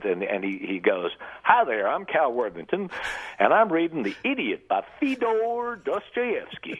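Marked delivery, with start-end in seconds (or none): 1.4-6.8 very high, car-ad salesman style voice. Recalling how a man started out reading a book in a Cal Worthington accent. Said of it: "a fairly good accent".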